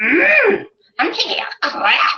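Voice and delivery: high, strained voice pushing the words out. Joking about how Yoda always sounds when he talks, mock-straining Yoda voice. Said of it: "like he's constipated every time he talks".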